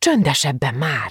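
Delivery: angrily hissing. Gitta grabs the shouting girl's arm and shakes her, hissed angrily. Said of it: "sziszegte dühösen".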